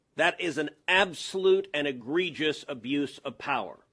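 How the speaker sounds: ordinary talk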